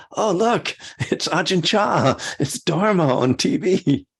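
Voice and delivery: high, loud, delighted exclamation. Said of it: "And I'm always like".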